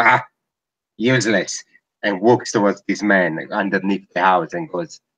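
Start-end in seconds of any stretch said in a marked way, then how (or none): 0.0-1.6 put-on dismissive mutter, higher. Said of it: "just goes like this, like".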